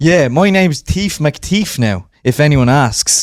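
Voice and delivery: fake Irish brogue, put on. Playing a thief in a heist skit, asking how it sounds: put-on Irish accent.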